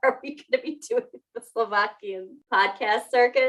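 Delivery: ordinary delivery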